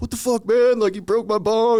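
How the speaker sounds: mock pissed-off shouting, very high, furious. Retelling a party where one friend yells at another for breaking his bong, retelling an angry yell. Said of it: "they're there like yelling at each other".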